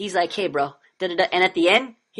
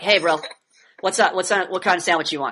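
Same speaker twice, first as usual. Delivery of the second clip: flat, level monotone throughout. Describing a cool bro dude's way of talking, imitating flat bro monotone. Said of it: "like it's question".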